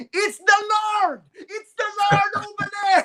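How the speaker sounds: loud high-pitched shout.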